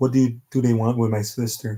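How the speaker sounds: plain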